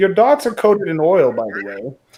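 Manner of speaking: put-on loud, swooping elderly man's voice. Telling friends what the old man's voice says in your head: old man voice. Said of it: "you hear the old man's voice, and he says".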